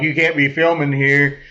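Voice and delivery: ordinary talk, nothing marked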